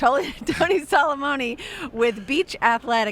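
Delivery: speech broken by laughter. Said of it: "I'm sorry I'm laughing".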